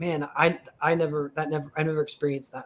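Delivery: ordinary talk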